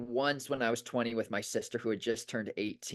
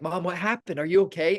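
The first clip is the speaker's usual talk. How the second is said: play-acted frantic panic, high and loud; 6 semitones higher, 5 dB louder than usual. Retelling mom's phone call, the speaker replays their own reply, acting out own panic. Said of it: "I'm like panicking".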